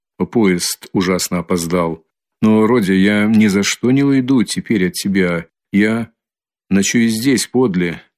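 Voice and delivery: ordinary talk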